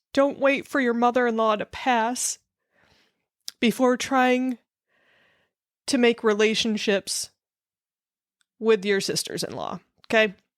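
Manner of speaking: crying voice, words pushed out through tears. Speaker who thought the crying was over keeps talking: speaking through tears. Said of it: "I'm going to say it through my tears".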